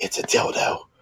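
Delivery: soft, sudden, hushed, confiding stage whisper. Retelling a line a movie character says, whispering. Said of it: "and he whispers".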